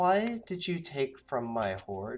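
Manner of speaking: otherworldly, ethereal, dreamy dragon voice. Voicing a silver dragon who confronts the player: oddly high feminine dragon voice. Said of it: "With an oddly high, uh, almost feminine voice".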